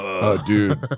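put-on stoner voice. Imitating a listener who calls in to correct the show: imitating Evan from Tempe. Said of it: "call it, like".

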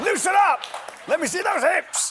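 shrill, very loud, high, drawn-out barked shout. Recalling how a man shouted at them while they learned dancing, retelling someone shouting. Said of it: "he just shouted at me".

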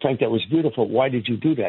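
ordinary delivery

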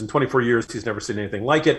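ordinary talk

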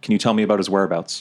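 ordinary delivery

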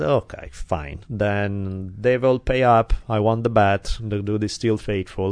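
ordinary delivery

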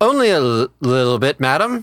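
put-on drunk, tipsy, slurring and stumbling over words. Answering the shopkeeper while in character as drunk: drunk slurring. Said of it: "you appear to be inebriated".

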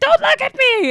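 put-on high, loud scream in a young child's voice.

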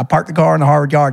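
heavy, quick Southern American accent. Showing how people in the south would say it, in a strong southern us accent. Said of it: "así como que muy sureña".

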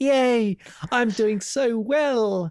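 very high, very slow, drawn-out acted delighted cheer. Describing a film character jumping on the mat: imitating a thrilled Chong Li. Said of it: "he looks really pleased and happy, and he's just like".

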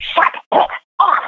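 hissed, hissing voice. Retelling how an old man in the audience scolded someone: imitating a hiss.

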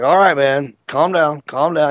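ordinary talk

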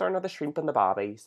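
put-on Australian accent. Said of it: "showcase your accent skills".

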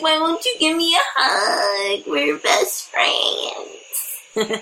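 put-on very drawn-out, slow, sobbing, weepy drunken whine. Showing how they would whine when drunk, imitating drunk whining. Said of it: "That's drunk, Jessica".

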